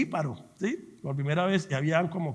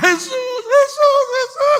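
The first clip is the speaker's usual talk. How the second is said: put-on shout, much higher, louder; 13 dB louder than usual. Speaker recalling leaving after the license test in tears, retelling their own shout. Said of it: "¿sabe yo qué gritaba?".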